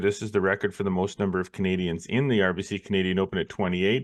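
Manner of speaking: usual speaking voice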